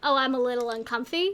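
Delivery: plain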